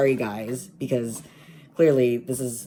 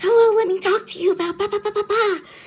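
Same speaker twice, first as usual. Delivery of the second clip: very high-pitched, loud voice; 6 dB louder than usual. Showing how they greet strangers at their doors, in a higher-pitched voice. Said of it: "slipping into uh, a higher pitched voice".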